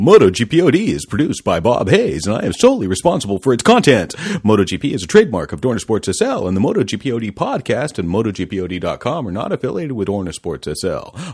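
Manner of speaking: put-on radio broadcast announcer voice. Podcast host re-recording the show's disclaimer, in the radio announcer voice. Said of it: "do it in the radio voice".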